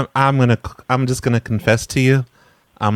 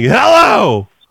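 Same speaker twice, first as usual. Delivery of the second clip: yelling loudly and high; 9 semitones higher, 5 dB louder than usual. Retelling how the other caller answered the phone: imitating someone yelling. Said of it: "you're just like".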